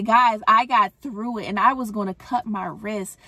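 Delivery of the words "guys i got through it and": plain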